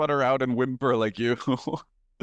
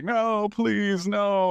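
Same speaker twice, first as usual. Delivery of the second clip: mock high whimpering, sob-filled; 8 semitones higher than usual. Acting out pleading with a ghost in bed: mock whimpering and sobbing. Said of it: "I would whimper and sob and be like".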